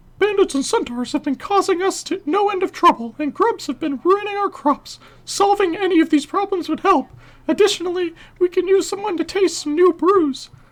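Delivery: squeaky voice at very high pitch. Voicing a game character's dialogue at a viewer's request, Mickey Mouse voice. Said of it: "Mickey Mouse voice for this guy".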